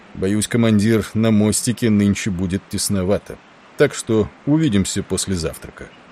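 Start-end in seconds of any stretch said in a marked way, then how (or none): none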